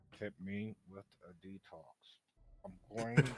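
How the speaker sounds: speaking in a whisper. Voicing a character who asks another for a detox: whispering. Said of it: "Fade's whispering to Lily".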